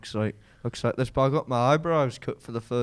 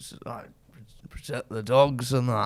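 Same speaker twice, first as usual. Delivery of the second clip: put-on Scottish accent. Doing an impression after being asked: Sir Alex Ferguson impression. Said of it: "Say it again".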